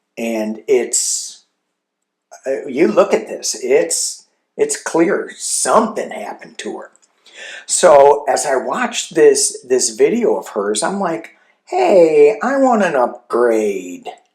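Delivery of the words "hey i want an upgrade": slow, drawn-out, swooping whine. Retelling what they said while watching her video, the speaker does a whiny request. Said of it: "I said it in that whiny voice".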